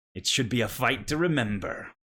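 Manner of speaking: announcer-style voice, loud. Voicing a Kenku proclaiming loudly to the crowd: Bandyman's voice through a Kenku, proclaiming loudly. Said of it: "you hear Bandyman's voice come out of the Kenku's".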